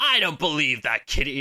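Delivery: put-on Australian-accented voice. Retelling a cartoon scene: Wolverine voice. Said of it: "this Wolverine voice".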